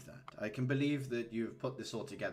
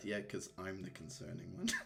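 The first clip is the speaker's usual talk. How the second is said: soft mumble under the breath, half to oneself; 2 semitones lower, 6 dB quieter than usual. Voicing a character who is reading a spy novel: mumbling under her breath. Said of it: "she mumbles under her breath".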